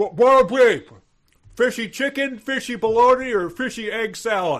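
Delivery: very high, very loud, shrill, with mouth full. Narrating Corky calling out from the kitchen, talking with his mouth full. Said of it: "calls out from the from the kitchen with his mouth full".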